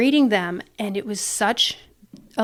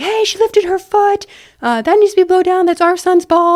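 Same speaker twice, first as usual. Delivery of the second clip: very loud, shrill, flipped-out scream; 10 semitones higher, 10 dB louder than usual. Retelling how a dad at the game screamed at the ref: imitating a screaming dad. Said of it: "screaming at me".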